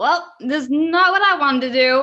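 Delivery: light, half put-on Brooklyn accent. Voicing a character in the game after being urged on: semi-Brooklyn accent. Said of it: "semi-Brooklyn thing that was going".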